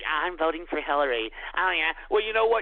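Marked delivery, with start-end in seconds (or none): 0.0-1.3 sneering, low, mocking take on a fruity voice. Mocking callers who left messages on the show: mocking imitation of callers' voices. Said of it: "You fruity asses that thought it was so cute".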